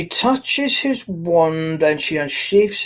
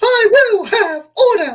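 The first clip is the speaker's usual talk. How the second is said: prim, very high, loud, raised voice; 5 dB louder than usual. After mentioning Dolores Umbridge, a former voice actor performs a Dolores Umbridge voice. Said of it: "once you've been a voice actor, it comes in handy".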